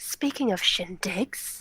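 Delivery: barely voiced, faint whisper. Voicing a character who draws out her dagger: whispering. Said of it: "draws out her dagger and whispers".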